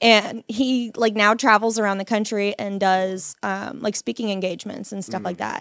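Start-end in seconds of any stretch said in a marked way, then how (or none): none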